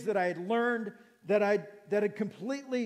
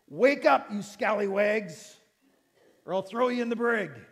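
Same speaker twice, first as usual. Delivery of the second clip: put-on pirate voice, faster; 4 dB louder than usual. Speaker acts out an imagined shout at listeners in a pirate voice. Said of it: "It's my best pirate voice".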